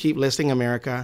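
relaxed, through-the-nose voice. Redoing a line the way Ira Glass would say it: nasal Ira Glass impression. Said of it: "Ira Glass would say it like, ... A little more nasally".

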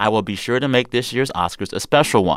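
normal talking voice

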